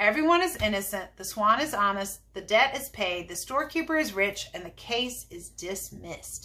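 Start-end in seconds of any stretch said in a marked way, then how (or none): none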